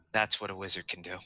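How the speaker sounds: very quietly spoken, hushed, under the breath. After the fireball, a character speaks to a companion, in a very quiet voice. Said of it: "very quietly in Elvish".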